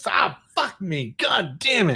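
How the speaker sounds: slow, pained cursing through the hurt. Retelling cursing after a wrench slips and smashes a hand: imitating pained cursing. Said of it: "a wrench slips and I smash my hands".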